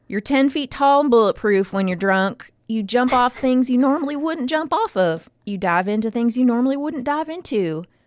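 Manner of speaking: put-on Virginia accent. Reading a listener's note aloud in a put-on virginia accent. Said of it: "do a Virginia accent".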